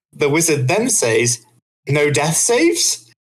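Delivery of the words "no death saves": mock defiant, combative, confrontational challenging tone. Retelling the wizard's words to the DM, mock-confrontational. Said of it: "In a confrontational tone".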